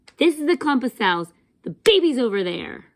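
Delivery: mock angry, annoyed tone. Retelling an ultrasound visit, imitating the woman who got mad at them. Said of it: "very mad at me, this is how she did it".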